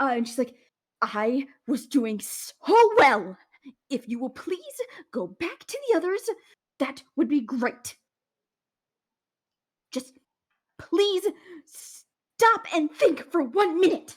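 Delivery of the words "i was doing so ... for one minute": angry, higher pitch. Voicing a character glaring at Tyrus and telling him to go back: pissed off. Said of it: "this pissed".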